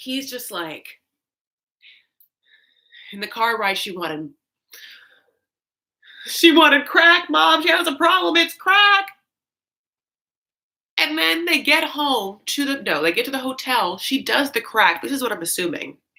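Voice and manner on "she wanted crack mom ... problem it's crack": put-on high, tear-choked, blubbering sobbing. Recapping an episode, the speaker acts out a man in a car ride, imitating him crying. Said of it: "he's crying".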